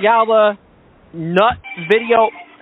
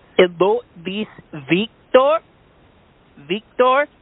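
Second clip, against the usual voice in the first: put-on heavy, thick Mexican accent; 2 semitones lower than usual. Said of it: "You have a very, uh, Chinese accent".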